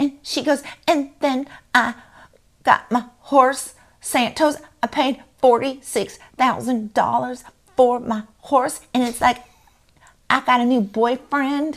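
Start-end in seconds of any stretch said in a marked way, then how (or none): 0.9-8.8 put-on cutesy voice, much higher, slower. Mocking a woman who tries to act all cute, imitating her cutesy act. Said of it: "that's a very good impression".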